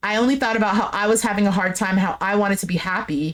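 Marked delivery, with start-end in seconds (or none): none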